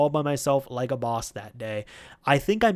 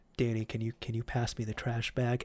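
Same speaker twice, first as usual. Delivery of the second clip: deflated, meek, soft and quiet voice; 3 semitones lower, 9 dB quieter than usual. Retelling how a scolded coworker asked for a trash bag: imitating Steve speaking quietly. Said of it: "he's just kinda quietly".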